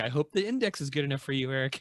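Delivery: smarmy, sarcastic tone. Quoting an inscription an author wrote in his book: imitating a smarmy sarcastic remark. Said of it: "really smarmy, sarcastic remarks".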